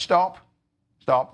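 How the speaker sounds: clear, carrying voice. Stopping a student from telling more, in a loud, clear voice. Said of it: "in a loud, clear voice".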